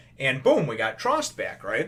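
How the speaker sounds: normal talking voice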